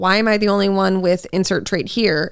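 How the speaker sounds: plain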